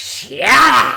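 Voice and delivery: very loud, big booming bellow. Retelling a wrestler telling someone to shut up, Vince McMahon impression. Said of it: "In his best Vince McMahon impression".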